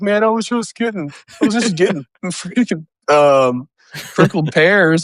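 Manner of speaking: put-on sad voice. Retelling what another player said after being killed: imitating a sad voice. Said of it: "a sad voice".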